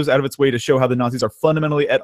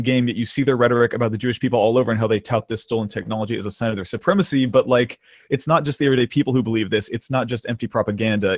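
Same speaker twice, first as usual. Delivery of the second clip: usual speaking voice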